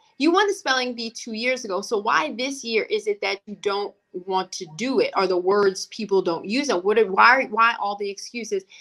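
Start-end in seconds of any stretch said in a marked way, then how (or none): none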